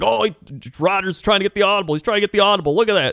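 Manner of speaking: put-on, high, excited, worked-up, freaking-out delivery. Retelling a moment right before the half, imitating Peyton freaking out. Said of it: "Peyton was, like, freaking out".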